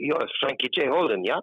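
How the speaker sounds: put-on clear German-accented speech. Retelling what a man on a cliff track said to him: imitating Hans's German accent. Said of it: "and he had a German accent".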